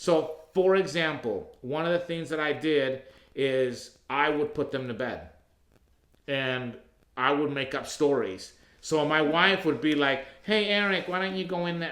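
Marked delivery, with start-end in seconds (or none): 10.4-11.9 put-on woman's voice. Retelling what the wife would say at bedtime: imitating the wife. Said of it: "My wife doesn't really sound like that".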